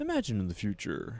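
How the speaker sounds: pleasant nineties commercial narrator voiceover. Imitating an old commercial's narrator: imitating AT&T commercial voice. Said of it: "nice sounding voice talking about the future".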